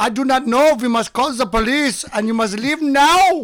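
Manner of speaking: put-on German accent. Retelling what a security guard said: imitating a German security guard. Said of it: "He was very German".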